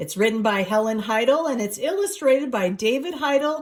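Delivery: plain reading voice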